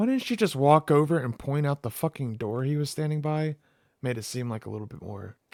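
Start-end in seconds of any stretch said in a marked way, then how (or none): none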